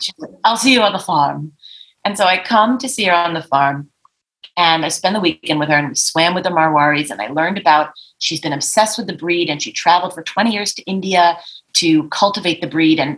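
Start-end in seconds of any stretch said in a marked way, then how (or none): 0.4-1.5 put-on posh, fabulous upper-class British socialite accent. Retelling a phone call with a horse owner: imitating her fabulous British accent. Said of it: "She's this fabulous accent".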